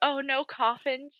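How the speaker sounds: acted, soft, fretful, uneasy, anxious voice. Recapping Bella's house tour, imitating anxious Bella. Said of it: "with anxiety".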